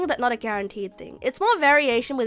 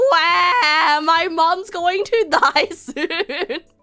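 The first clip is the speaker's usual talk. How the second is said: mock very slow, tearful, drawn-out crying; 7 semitones higher, 7 dB louder than usual. Retelling how they cried as a child: imitating own past crying. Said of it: "I would just be crying like".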